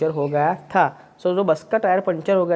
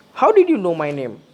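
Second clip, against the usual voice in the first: final name lifted in pitch and lengthened, rising tone; 3 dB louder than usual. Speaker demonstrates question intonation in an english lesson, rising pitch at the end. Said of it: "rise your sound or voice in a pitch at the end".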